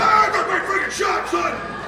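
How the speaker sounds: triumphant, taunting yell.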